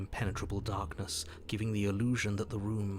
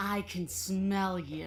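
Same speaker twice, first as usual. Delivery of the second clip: growled in princess voice; 10 semitones higher than usual. Voicing the princess below, calling up the stairs: growling princess. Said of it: "She growls up the stairs".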